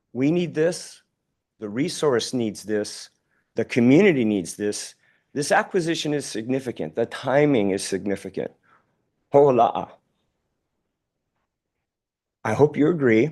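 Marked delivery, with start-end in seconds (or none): 5.4-13.4 choked-up, emotional voice catching. Speaker, thinking of Uncle Gordon, is getting choked up. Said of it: "I'm getting choked up".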